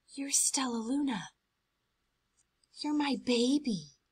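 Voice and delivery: whispering softly. A mother bat sniffs stellaluna's fur and recognizes her child, whispered. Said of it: "she whispered".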